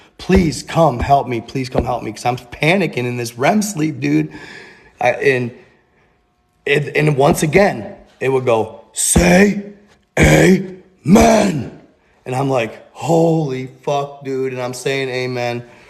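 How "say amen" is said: rasping, rough, growl-like voice. Retelling a voice heard while panicking in REM sleep, in a growling voice. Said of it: "in a growling like voice".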